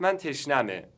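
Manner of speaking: normal talking voice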